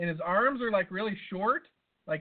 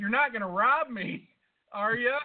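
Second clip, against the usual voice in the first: mock yell, higher pitch; 5 semitones higher than usual. Retelling calling over to a man who can't walk, retelling a yell. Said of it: "so I yell over to him".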